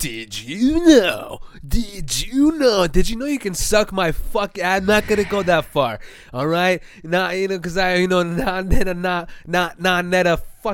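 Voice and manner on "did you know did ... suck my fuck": mocking narrator delivery, higher pitch. Mocking how online video narrators talk: imitating video narrators. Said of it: "it's just basically like".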